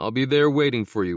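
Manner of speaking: ordinary delivery, nothing marked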